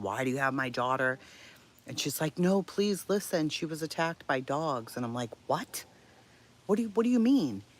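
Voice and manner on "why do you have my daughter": put-on, acted-out yelling. Retelling what she shouted at the woman who had her daughter, retelling a yell. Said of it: "So I'm like yelling at her".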